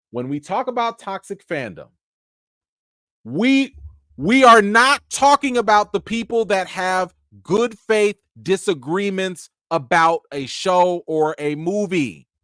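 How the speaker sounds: slow, deliberate, each word separate. Explaining to viewers what toxic fandom is not: saying it slowly. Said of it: "I have to say this slowly".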